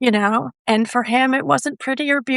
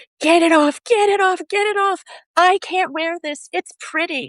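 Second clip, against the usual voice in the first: mock frantic child screaming, high-pitched; 5 semitones higher than usual. Speaker retelling how he reacted to wearing a Minnie Mouse shirt: imitating someone screaming. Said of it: "he started screaming like his skin was on fire".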